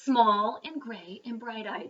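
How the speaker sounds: ordinary delivery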